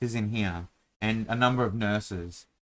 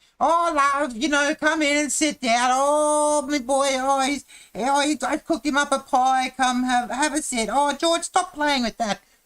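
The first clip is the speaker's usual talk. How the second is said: very high, loud and shrill woman's voice; 7 dB louder than usual. Demonstrating ways to talk in a feminine voice, in a Monty Python feminine voice. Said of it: "that's a very Monty Python way".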